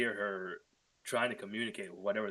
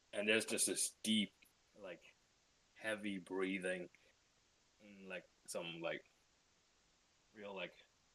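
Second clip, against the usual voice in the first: usual speaking voice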